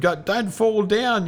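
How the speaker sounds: mock very high-pitched worried shout. Speaker retells shouting at a man who had climbed a tree: retelling a yell. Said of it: "I was yelling at him".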